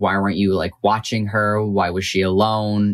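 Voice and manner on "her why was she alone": normal talking voice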